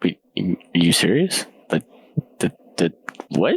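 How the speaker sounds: confused mumbling under breath. Playing a character in a role-play scene, confused mumbling under breath. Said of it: "mumbling under my breath in like a confused state".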